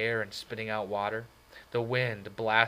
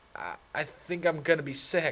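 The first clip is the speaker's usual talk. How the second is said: pitched-up, slow, struggling words forced out; 6 semitones higher than usual. Narrator reads his own line to Johnny, struggling to speak, dizzy. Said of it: "I managed to say, fighting the dizziness".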